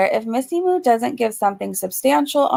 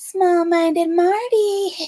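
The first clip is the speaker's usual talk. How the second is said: eerie, creepy horror-doll voice, pitched up; 6 semitones higher than usual. Retelling a voicemail Missy Moo left, imitating Missy Moo's creepy voice. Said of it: "That's how Missy Moo sounded".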